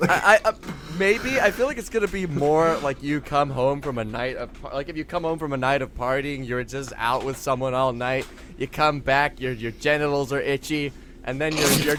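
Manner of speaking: ordinary talk, nothing marked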